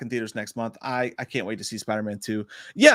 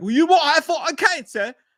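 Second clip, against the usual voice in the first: very high, loud, awful fake London accent; 5 dB louder than usual. Imagining hospital staff in England talking to a patient, bad London accent. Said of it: "That's the worst fucking London accent".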